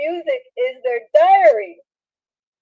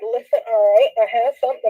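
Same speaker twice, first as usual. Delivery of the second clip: plain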